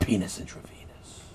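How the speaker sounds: hushed, breathy, close whisper. Retelling how a man leaned in close to his ear: imitating someone whispering. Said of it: "wanna whisper in your ear 'cause he didn't want anybody to hear".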